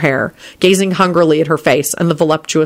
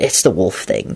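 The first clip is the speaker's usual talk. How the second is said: very low, sheepish, embarrassed mumble; 9 semitones lower, 3 dB quieter than usual. Narrator reads a man answering her question, embarrassed mutter. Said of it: "he muttered with an embarrassed expression".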